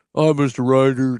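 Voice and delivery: put-on low, deep young man's voice. A father imitating his teenage daughter's boyfriend greeting him, deep voice. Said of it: "deep voice".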